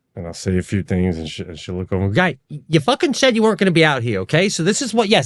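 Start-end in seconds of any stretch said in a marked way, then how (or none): 2.1-4.5 high, mad, exasperated, irritated tone. Retelling how Jackie reacts when he comes in at night, imitating Jackie getting mad. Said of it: "she gets mad when I come in".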